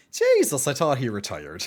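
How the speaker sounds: put-on strong, sing-song Irish accent slipping out. Recalling their first comment on seeing someone they thought retired, in a strong Irish accent. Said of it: "the pure Irish accent comes out at that stage".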